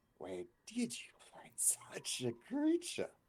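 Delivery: put-on very high, loud, croaky old hag voice. Narrator voicing a hag eyeing the group, croaking hag voice. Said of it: "the hag croaks".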